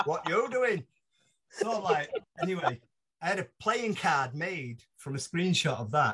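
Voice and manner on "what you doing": put-on high-pitched thick Yorkshire accent. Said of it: "in this thick Yorkshire accent".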